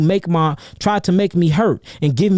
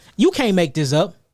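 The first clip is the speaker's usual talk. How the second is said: ordinary delivery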